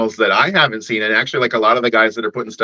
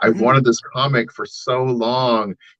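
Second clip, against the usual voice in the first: mock teary, slow, crying voice, overcome with emotion; 2 semitones higher than usual. Retelling a collector crying while holding a comic: imitating someone crying. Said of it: "he tear up and he starts crying".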